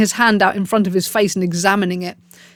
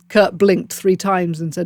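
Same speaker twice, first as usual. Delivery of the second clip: ordinary delivery, nothing marked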